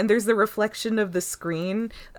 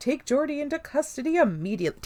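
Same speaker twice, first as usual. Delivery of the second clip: official, urgent, fully authoritative voice, pitched up; 7 semitones higher than usual. Recapping a scene where Data calls a crewmate, doing Data's official voice. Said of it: "Data sounds so official here".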